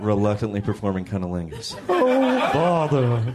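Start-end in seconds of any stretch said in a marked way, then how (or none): 1.9-3.3 cartoon bear voice. Speaker repeating his Winnie the Pooh impression right after naming it. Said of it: "That's my impression of Winnie the Pooh".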